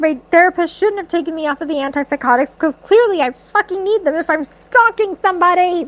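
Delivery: imitated panicked, freaking-out ranting. Retelling a book character's reaction: imitating a character freaking out. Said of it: "he's freaking out about it".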